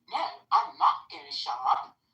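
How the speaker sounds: affected, put-on male voice, high and creaky.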